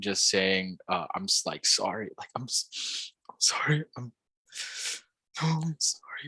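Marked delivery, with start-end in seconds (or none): 1.1-6.3 whispered, broken, with sporadic sobs. Retelling what someone kept saying while curled up, imitating sporadic crying. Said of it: "very sporadically while crying".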